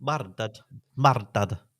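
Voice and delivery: bad, attempted Scottish accent. Echoing the other speaker about a murder: attempted Scottish accent. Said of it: "crucify our Scottish accent".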